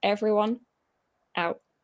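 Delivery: quiet, calm, stern and firm. Retelling ordering players out of the physio room: retelling a calm firm order. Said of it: "didn't raise my voice, didn't say anything else".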